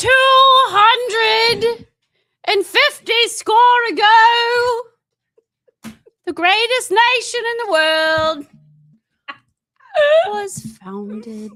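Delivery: shrill, booming put-on British accent, high, loud, ago stretched. Greeting the ladies and gentlemen to open the show, in a put-on british accent. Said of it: "It's going to take a lot for me to stay in this in this accent".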